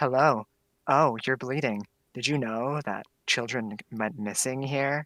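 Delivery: mock dark, foreboding, slow, ominous monotone. Describing how a woman talks throughout a movie, mock-ominous line delivery. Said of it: "she talks so ominously throughout the entire movie like".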